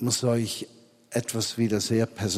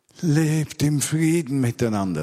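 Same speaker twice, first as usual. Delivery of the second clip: mock, raised, near-desperate, almost despairing tone; 5 semitones higher, 5 dB louder than usual. Speaker acts out how he could say the line: acting almost desperate. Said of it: "Da ist er schon beinahe verzweifelt".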